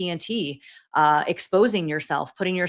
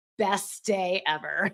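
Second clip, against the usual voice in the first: a little sarcastic, tongue in cheek; 6 dB quieter than usual. Retelling how two tired colleagues looked at each other: imitating a sarcastic remark. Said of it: "with also with a little sarcasm".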